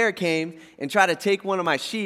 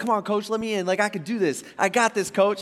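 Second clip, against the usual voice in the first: all fired up, eager, pleading tone; 3 semitones higher than usual. Retelling David begging the king to send him out: imitating David all pumped up. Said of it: "he's all pumped up".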